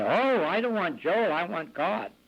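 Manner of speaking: put-on scream, mild, slow, drawn-out, held back. Retelling how a lady woke and saw him on her bed: imitating a scream. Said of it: "And she screamed".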